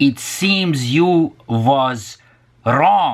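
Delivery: slow, drawn-out Hungarian accent.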